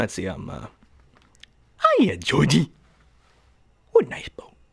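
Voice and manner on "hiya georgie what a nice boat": lilting, animated character voice, pitch swooping up and down. Imitating the new clown offering Georgie his boat: new Pennywise voice. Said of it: "as for the new Pennywise".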